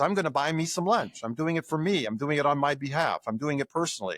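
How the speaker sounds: ordinary talk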